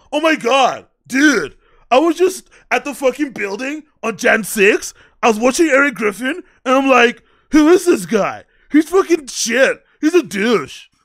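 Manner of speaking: dismissive, dumb-sounding bro voice. Mocking how the other speaker voices haters: imitating a Chad hater voice. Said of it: "Every guy to him sounds like a Chad".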